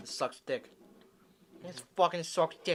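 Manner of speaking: put-on fake Boston accent. Mocking how someone reacts to a bad game: put-on Boston accent. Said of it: "And you turn Boston".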